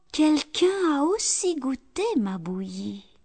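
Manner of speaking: very soft storybook voice. Mama Bear looks at the table in her turn, in a very soft voice. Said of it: "de sa voix toute douce".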